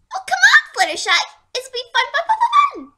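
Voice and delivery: high, squeaky little cartoon voice. Acting out a scene's lines, in a squeaky voice. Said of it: "my voice is so squeaky".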